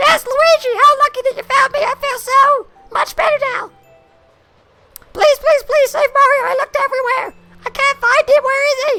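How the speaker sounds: shrill, very high, loud character voice. A streamer voicing a game character's lines, Toad voice. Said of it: "That's my Toad voice".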